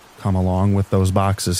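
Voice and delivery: plain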